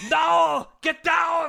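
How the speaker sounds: very high, rough, hoarse barked shout. Joking around on a podcast with a guest, Arnold Schwarzenegger impression. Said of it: "I went full Arnold there".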